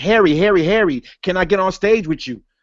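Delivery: put-on sad, begging, pleading voice like a lap dog. Retelling how a guest on the show asked Harry to join him onstage, imitating Brother Israel Doctrine begging. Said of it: "it sounded like he was begging".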